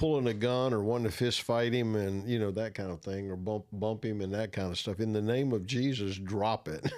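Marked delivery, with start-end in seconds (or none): none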